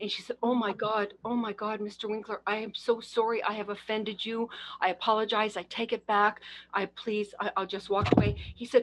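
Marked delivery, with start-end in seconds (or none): 0.4-8.4 acted anxious, stumbling, nervous, tearful delivery. Retelling a nervous apology after asking someone to be a mentor: imitating a nervous apology. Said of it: "she was nervous as anything".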